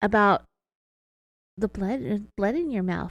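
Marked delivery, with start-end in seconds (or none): 2.4-3.1 low, self-mocking jeer. Retelling how Sherry lowered her tone and mocked herself: imitating Sherry's low mocking tone. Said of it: "lowered her tone and made sort of a mocking statement".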